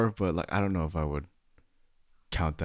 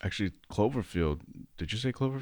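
ordinary talk

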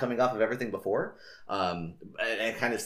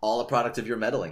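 usual speaking voice

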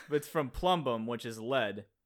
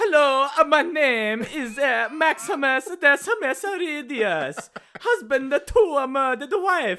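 put-on Italian plumber accent, higher and louder; 11 dB louder than usual. Redoing the Gladiator line as it should sound, Mario voice. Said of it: "weren't you just quoting Mario".

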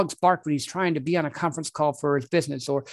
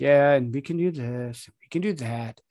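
mock half-engaged, disengaged presenter delivery; 3 semitones lower than usual. Imitating a presenter who is only halfway listening: imitating a half-engaged presenter. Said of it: "they're halfway listening, they're halfway there".

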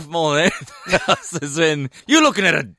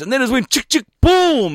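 put-on voice, pitched higher; 6 semitones higher than usual. Retelling how a girl described an incident: imitating a fully sick wog boy voice. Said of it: "that sort of fully sick wog boy type of voice".

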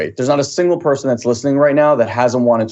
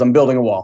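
put-on miserable, gloomy, moody, upset man voice. Retelling a story of a bricklayer answering a passerby: imitating a miserable, moody man. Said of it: "he's miserable and he's upset and he's kinda, like, moody".

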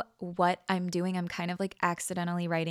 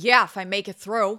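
very loud, outspoken sarcastic tone; 9 dB louder than usual. Retelling grandmother's reply as she was taken into surgery, imitating her sarcastic, outspoken voice. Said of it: "in her sarcastic, outspoken voice".

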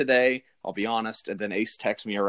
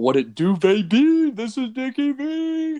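terrible, very high, loud, slow squealing voice; 13 semitones higher, 5 dB louder than usual. Greeting listeners on the show: terrible Dick Vitale impersonation. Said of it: "that was a terrible impersonation".

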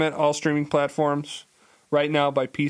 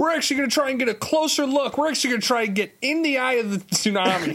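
very high, overly eager weatherman voice; 10 semitones higher than usual. Joining a joke about an overly dedicated weatherman: overly dedicated weatherman voice. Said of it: "Overly dedicated weatherman".

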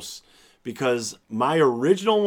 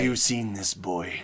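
speaking in Irish brogue; 6 semitones lower, 6 dB quieter than usual. Imitating the actor from Dark Knight Rises, doing an Irish brogue impression. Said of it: "he talks like that".

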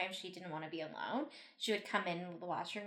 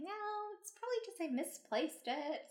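very high-pitched motherly voice; 11 semitones higher, 3 dB quieter than usual. Retelling what their mom said back to them, imitating mom's voice. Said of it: "I have my, like, mom's voice".

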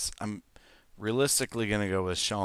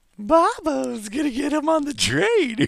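put-on eerie voice, very high-pitched; 8 dB louder than usual. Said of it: "that's fucking creepy".

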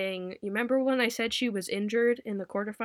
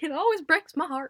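put-on Texan accent, higher and louder; 7 semitones higher, 4 dB louder than usual. Reporting a lineup change, the speaker laments a player sitting out, in a Texan accent. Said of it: "Gotta say it in the Texan accent".

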